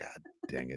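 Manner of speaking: soft scolding tone.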